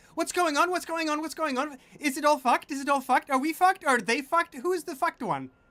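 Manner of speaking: very high, loud, excited fairy-voice babble. Voicing fairies who fly in after hearing exciting sounds: voicing excited fairies. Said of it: "the fairies ... come flying".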